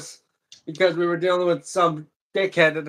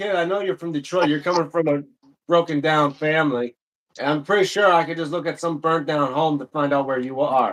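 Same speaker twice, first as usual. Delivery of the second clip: plain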